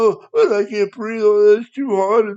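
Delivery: play-acted high, loud blubbering and sobbing. Mocking caught lawbreakers complaining in boot camp; imitating people crying. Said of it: "and they're crying".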